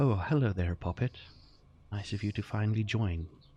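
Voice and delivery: put-on woman's voice with Irish accent. Narrator voicing a voice the player hears, in a deep Irish female accent. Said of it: "Deep Irish female accent".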